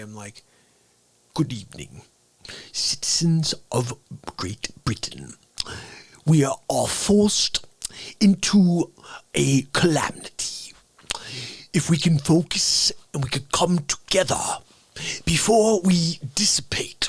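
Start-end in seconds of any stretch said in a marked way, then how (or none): 1.3-17.1 breathy, whispered put-on voice. Showing the voice of Boris Johnson that came to mind: Boris Johnson voice. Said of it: "I never did Boris Johnson".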